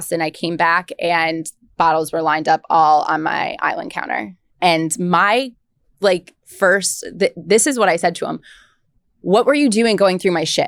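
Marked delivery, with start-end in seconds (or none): 9.2-10.7 mock defensive, fast, blurted outburst. Quoting what they said to him after he found the bottles, retelling a defensive outburst. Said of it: "I was so defensive".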